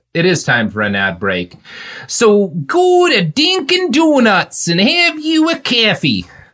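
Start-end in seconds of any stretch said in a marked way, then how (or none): 2.0-6.2 bad put-on Boston accent, very high and slow. Speaker leads into an ad break, in a put-on Boston accent. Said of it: "should I do my Boston accent".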